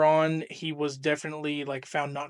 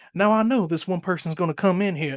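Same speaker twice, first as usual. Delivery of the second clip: folksy Missouri character voice, put-on, played broad; 2 semitones higher, 3 dB louder than usual. Recounting a comedic bit by someone he watches: imitating his Missouri character's voice. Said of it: "That's like this this kind of voice he's got".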